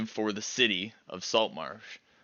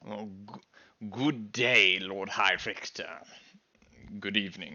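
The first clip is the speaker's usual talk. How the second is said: put-on plummy, aristocratic, posh upper-class accent. A character greets the town's High Victor, posh accent. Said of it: "he has a posh accent too".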